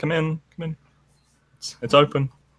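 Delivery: high, piping woman's voice. Answering the visitors' greeting, a woman speaks up in a soft woman's voice. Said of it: "a soft woman's voice sort of pipe up".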